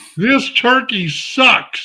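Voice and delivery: put-on little boy's blurted, bellowing outburst. Retelling a three-year-old son's outburst at the dinner table: imitating a child bellowing. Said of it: "bellows out at the top of his lungs".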